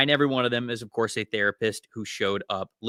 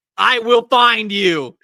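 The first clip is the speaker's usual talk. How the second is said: put-on scream, higher and louder; 11 semitones higher, 11 dB louder than usual. Retelling how players react to getting sniped from far away: imitating someone screaming. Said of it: "you're just screaming".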